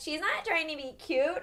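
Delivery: put-on drunken voice shooting up very high. Retelling what a friend said while drinking: imitating Catherine's very high drunk voice. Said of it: "she goes, like, seven octaves higher".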